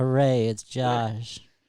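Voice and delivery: sarcastic fake excitement. Greeting a caller who just got through: sarcastic fake excitement. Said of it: "You sound so excited to hear from me".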